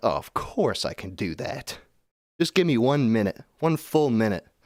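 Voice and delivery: obliging, compliant AI assistant voice. Acting out an imagined AI tool answering a request: imitating Samuel the AI assistant. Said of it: "He's like".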